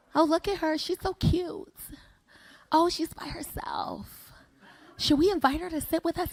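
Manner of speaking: put-on hushed, whispered chatter of gossiping girls. Retelling how a group of girls talked about her: imitating girls gossiping. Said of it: "I hear them talking about me".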